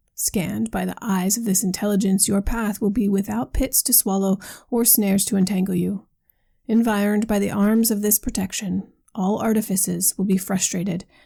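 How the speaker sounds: ordinary delivery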